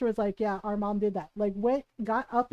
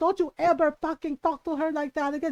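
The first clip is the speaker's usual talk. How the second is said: put-on angry yelling, higher pitch; 4 semitones higher than usual. Retelling how mom scolded a relative: imitating mom yelling angrily. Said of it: "my mom ripped into her".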